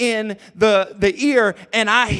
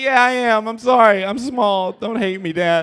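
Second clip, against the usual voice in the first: put-on crying like a child. Retelling how his dad reacted after a girl hit him, the speaker is imitating his own childhood crying. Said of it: "but you need to stop crying".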